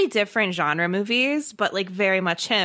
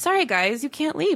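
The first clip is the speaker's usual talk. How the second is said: put-on matter-of-fact voice, slightly pitched up; 5 semitones higher than usual. Retelling a movie hermit's lines: imitating Zach, matter-of-fact. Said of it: "so matter-of-fact".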